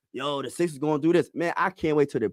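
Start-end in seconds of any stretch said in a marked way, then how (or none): none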